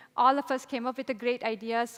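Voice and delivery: ordinary talk, nothing marked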